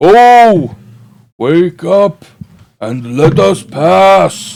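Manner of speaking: booming, very slow, drawn-out high shout. Storyteller voicing Beorn pounding on the cave opening, Beorn's booming shout. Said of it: "the booming voice of Beorn crack like thunder".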